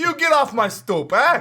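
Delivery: very high, attempted put-on New York accent. Speaker playfully shoos someone off a stoop, attempted new york accent. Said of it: "I was trying to be New York".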